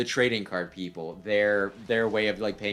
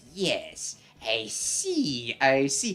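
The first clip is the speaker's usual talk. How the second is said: sly, sneaky weaselly voice with swooping pitch; 4 semitones higher than usual. Recapping a scene, voicing the one who takes Yugi's cards: weaselly voice. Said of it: "he has like a Weasley voice too".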